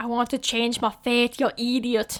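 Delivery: mock muddled accent, somewhat Scottish-sounding.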